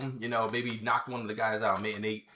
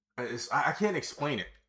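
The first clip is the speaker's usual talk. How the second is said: ordinary talk, nothing marked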